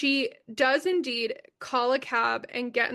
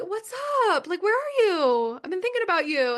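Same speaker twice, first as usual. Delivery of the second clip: put-on sweetness, pitched up and sing-song; 7 semitones higher than usual. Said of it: "a fake ass, like, trying to be nice".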